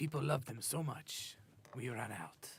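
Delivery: bad fake Spanish accent. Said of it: "Bad Spanish accent".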